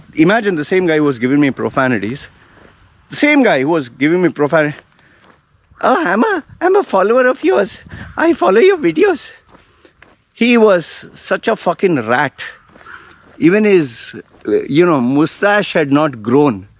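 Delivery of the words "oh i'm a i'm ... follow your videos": put-on squeaky, very high-pitched small-boy voice. Retelling what a guy who had sworn at him said, in a squeaky voice. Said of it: "squeaky voice".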